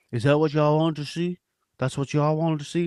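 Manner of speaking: humble, low-key, modest, unassuming delivery. Speaker imitates Jalen Hurts after his excellent game; soft-spoken Jalen Hurts impression. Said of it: "like the soft spoken voice".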